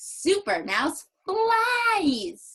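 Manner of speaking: big, bright, happy excitement, "flies" drawn out. Reading a book aloud, matching the character's face on this page: happy excited voice. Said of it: "Let's read it like that".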